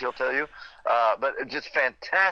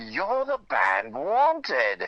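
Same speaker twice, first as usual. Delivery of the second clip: put-on lively British accent with swooping tune. Retelling meeting a man at a hotel elevator, the speaker quotes him in Paul Jupe's British accent. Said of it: "with a great British accent".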